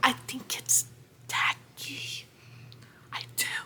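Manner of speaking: slow, very hushed, quiet whisper. Sharing what the speaker feels is a hot take, whispering. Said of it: "And I'm whispering because".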